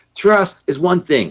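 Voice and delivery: put-on yelling, voice pitched very high, shrill. Retelling how one man yelled at another over a signature: retelling a yell.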